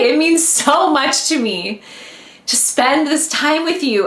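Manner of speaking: high-pitched, teary voice, choking up, close to tears. Host thanking listeners at the end of an episode, about to cry. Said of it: "I'm gonna cry".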